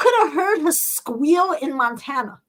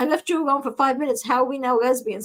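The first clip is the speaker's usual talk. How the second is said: ordinary delivery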